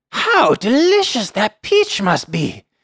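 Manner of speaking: put-on high-pitched elderly woman character voice. Reading a story aloud, voicing a woman character: old lady voice. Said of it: "I guess I'll do the old lady voice".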